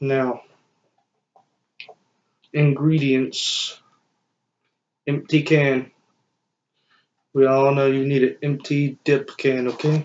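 held-back, considerate, careful, restrained delivery. Filming a video at night with family members sleeping, speaking a little quietly. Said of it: "I gotta be a little quiet".

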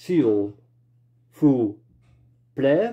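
s'il vous plaît, each syllable pronounced separately.

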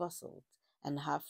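ordinary delivery

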